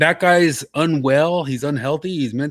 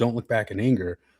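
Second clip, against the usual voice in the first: plain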